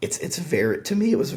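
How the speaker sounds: voice cracking and breaking, very high. Speaking mid-sentence to the listener, voice cracking. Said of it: "sorry my voice cracked".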